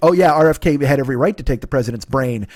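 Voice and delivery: ordinary talk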